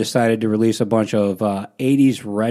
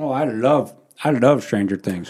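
talking with mouth full of food. Answering a question while eating, talking with your mouth full. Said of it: "say that again without something in your mouth".

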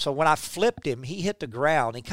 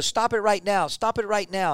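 mock old man voice screaming, much higher; 4 semitones higher than usual. Retelling how Fry came out of the dugout at him, imitating Fry screaming. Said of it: "He's screaming at me".

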